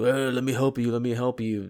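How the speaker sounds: put-on savage, feral, growly voice. Describing a game character who offers help, in a Tasmanian devil-like savage voice. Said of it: "He talks like a fucking Tasmanian devil".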